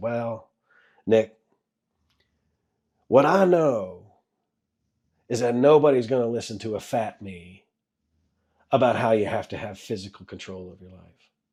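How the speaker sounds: put-on deep Southern accent, Texas and Carolina style. Retelling what Ziegler once answered him: imitating Ziegler's deep Southern accent. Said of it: "in the only way Ziegler can say it, he had that kind of deep Southern accent".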